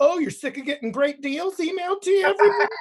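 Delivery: very high, sassy put-on attitude voice. Retelling a discount airline's unsubscribe email, read in a mock-sassy email voice. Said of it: "it got like the sassy".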